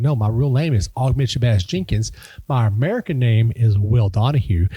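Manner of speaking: ordinary talk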